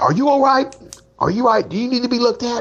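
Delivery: high-pitched, anxious, worried voice.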